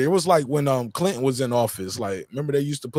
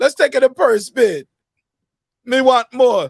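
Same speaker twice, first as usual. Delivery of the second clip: put-on very loud, shrill, high, terrible Jamaican accent; 11 semitones higher, 8 dB louder than usual. Imitating a boxer asking for more money: terrible Jamaican accent. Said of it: "That's a terrible accent".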